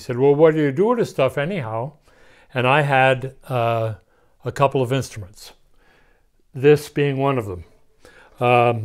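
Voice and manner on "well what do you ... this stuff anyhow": put-on Pennsylvania Dutch accent, faster. Speaker quotes the foreman at the back door, in Harvey Samuels' Pennsylvania Dutch accent. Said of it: "in Pennsylvania Dutch accent".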